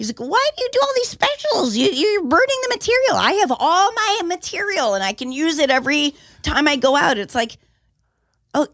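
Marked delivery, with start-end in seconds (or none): 0.2-7.2 high, yelling, scolding, hectoring rant. Retelling what Leno said to the speaker: imitating Leno yelling. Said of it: "I remember yelling at me going".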